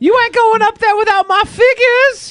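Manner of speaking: very high-pitched, comic put-on character voice. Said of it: "that's in Joe's voice".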